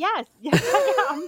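very high, slow, drawn-out yell. Retelling answering a lady across a packed restaurant: retelling own yell back. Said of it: "I had to yell back".

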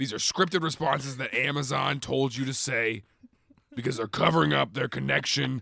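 preachy, conspiracy talk-radio host voice. Alex Jones accuses Alexa, then addresses listeners, done as an Alex Jones impression. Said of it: "the impression you're doing right now".

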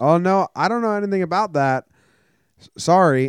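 mock super nice, friendly tone. Retelling a street preacher's reply, imitating a nice, friendly reply. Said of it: "Super nice and friendly with you".

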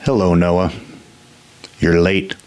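bored character voice. The Archivist greets Noah; the Archivist's bored voice. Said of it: "I would know that bored voice anywhere".

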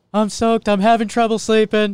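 very high, loud, gravelly voice. Repeating the quote in the pitcher's voice: Gerrit Cole impression sounding like Seinfeld. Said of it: "you just went to, like, Seinfeld again".

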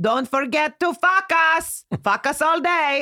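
put-on speaking with Israeli accent. Retelling what an astrologer from Israel would always say: imitating an Israeli accent. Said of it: "she was from Israel and she had the most hilarious accent".

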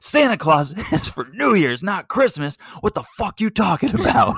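put-on loss of control, very high, swooping outburst. Retelling a reaction to a producer's Santa Claus question: imitating Borean losing it. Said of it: "And Borean loses it".

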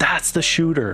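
put-on powerful yell. Retelling how Derek, on the bench behind, points out the shooter; retelling Derek's powerful yell. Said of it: "he points and yells".

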